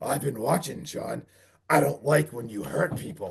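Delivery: rough, rasping, low, hushed, creaky demon voice. Retelling how a cop confronted a man, in a demon voice. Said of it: "the cop in demon voice is like".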